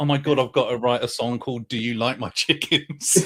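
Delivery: play-acted words bubbling with laughter. Retelling own reaction to the voice note: retelling own words while laughing. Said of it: "I was laughing and also going".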